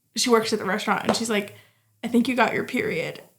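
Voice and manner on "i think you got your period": normal talking voice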